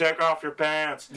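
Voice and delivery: put-on high, loud drunken yelling. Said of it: "shouting at him".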